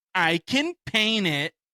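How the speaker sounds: slow, annoyed, pissed-off, dramatic delivery. Imitating the other person's tone during their argument, mock-pissed-off. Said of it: "drama and you being pissed off".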